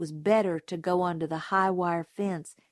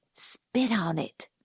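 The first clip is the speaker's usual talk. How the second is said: hushed, soft, breathy whisper. At a squeaking gate in the moonlight, one companion tells the others: whispered. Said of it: "whispered Dill".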